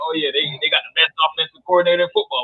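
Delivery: put-on sneering, sarcastic, mocking tone. Retelling Kiffin's shade at Leach on game day: sarcastic imitation of Kiffin. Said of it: "like a sarcastic way".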